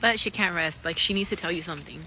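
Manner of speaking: plain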